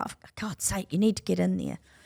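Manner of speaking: acted desperate begging voice. Retelling pleading with someone to go in now: retelling desperate begging. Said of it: "I was begging, I was desperate".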